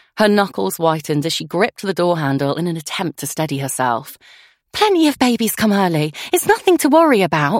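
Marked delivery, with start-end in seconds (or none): 4.8-7.6 soothing, comforting, reassuring, slightly pitched-up voice. Claudia reassures her friend Lucy, who is in pain beside her, reassuring. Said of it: "reassured Claudia".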